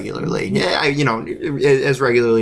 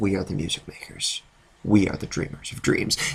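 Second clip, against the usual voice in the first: hushed, flat, dead-serious, expressionless deadpan; 3 semitones lower, 7 dB quieter than usual. Retelling a movie scene where he answers the little girl: imitating a deadpan delivery. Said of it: "just deadpan to her".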